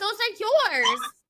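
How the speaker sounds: loud high-pitched yelling. Retelling finding the keys with a friend: imitating herself yelling. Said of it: "yelling at him".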